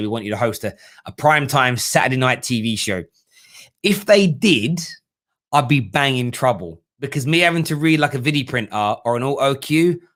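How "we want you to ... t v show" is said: normal talking voice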